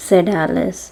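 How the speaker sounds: usual speaking voice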